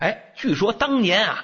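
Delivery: ordinary delivery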